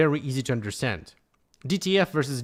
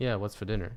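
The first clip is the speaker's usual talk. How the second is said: laid-back, low-energy, low, soft casual voice; 5 semitones lower, 6 dB quieter than usual. Showing the usual real-life way of talking: casual low-energy talk. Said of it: "I don't really talk like that".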